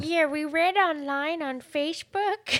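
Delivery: high, failed fake Chinese accent. Retelling what a group answered about their information, failed fake Chinese accent. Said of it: "You sound like an old woman from Minnesota".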